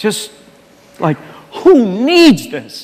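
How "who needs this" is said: fed-up, exasperated, utterly frustrated tone. Retelling the times when wanting to quit: imitating own past frustration. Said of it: "just utter frustration and feeling misunderstood".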